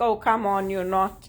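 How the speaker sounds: ordinary talk, nothing marked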